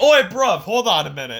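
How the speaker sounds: loud, high shout. Retelling what Will Ospreay said on seeing Ricochet: imitating Will Ospreay. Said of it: "Will Ospreay saw Ricochet on there and was like".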